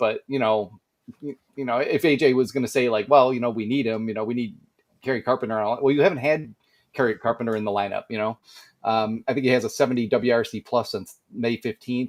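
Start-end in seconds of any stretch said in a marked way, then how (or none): none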